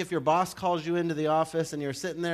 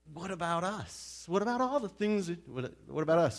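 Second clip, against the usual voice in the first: mock anxious, worried, hopeful tone; 4 dB quieter than usual. Speaker acts out Peter's questions after the rich man talks with Jesus, Peter's put-on worried hope. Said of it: "that's the tone of Peter's voice, is this worry hope".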